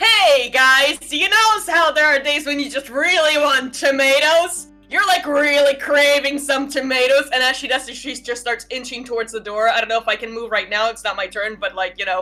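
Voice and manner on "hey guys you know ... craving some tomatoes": very loud voice projected to fill a room. Voicing a character who talks to goblins while inching toward a door: talking very loudly. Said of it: "just starts talking to all the goblins very loudly".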